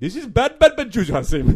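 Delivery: fake Indian accent, played for laughs. Scolding Hasim in a skit for crashing a plane: put-on Indian accent. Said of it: "you've been Indian on it".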